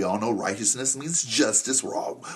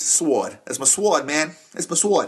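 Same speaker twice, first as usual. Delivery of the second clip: "sword" said with a northeastern US accent; 5 semitones higher, 3 dB louder than usual. Teaching about the sword of the spirit, saying it like someone from the northeast. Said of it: "Say it like you're from the northeast".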